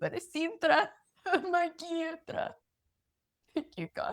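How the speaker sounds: very high, tearful crying voice. Telling a story on a broadcast, crying. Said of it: "No surprise I'm crying".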